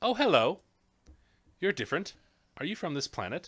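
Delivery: put-on soft childlike voice. Narrating a scene, the speaker voices a tree speaking to the visitors, gentle child's voice. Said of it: "with a gentle child's voice".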